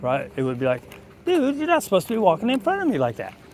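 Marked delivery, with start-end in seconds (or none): 1.3-3.3 silly, playful, very high sing-song voice. Demonstrating how to talk to a dog instead of an angry tone, in a goofy tone. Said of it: "if you're in a goofy tone".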